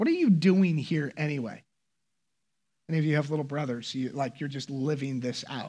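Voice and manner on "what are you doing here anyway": put-on angry outburst. Retelling what an angry man asked, mock-angry. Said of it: "he was angry".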